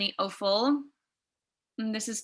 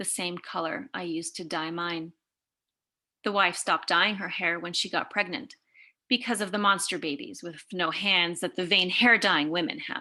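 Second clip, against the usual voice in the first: usual speaking voice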